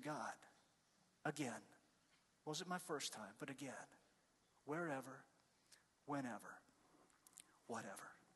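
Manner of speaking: very soft, hushed voice.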